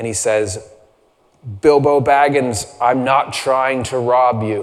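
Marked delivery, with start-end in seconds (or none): 1.6-4.6 big, slow, drawn-out, powerful wizard voice. Retelling a story, Gandalf answering an upset Bilbo, big, powerful Gandalf voice. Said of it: "That's a pretty good impression".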